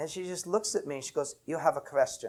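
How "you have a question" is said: put-on Russian-accented delivery. The speaker recalls an elderly woman's words to them, imitating a Russian accent. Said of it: "With this great Russian accent".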